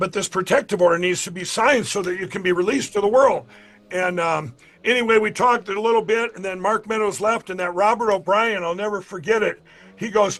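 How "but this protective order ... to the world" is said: usual speaking voice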